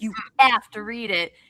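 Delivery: put-on pushy, menacing, insistent, threatening tone. Retelling how she shoved the first book at the speaker: retelling a threatening demand. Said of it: "it felt like a threat".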